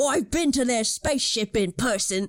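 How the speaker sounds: unsure, jovial cockney accent with shifted timbre.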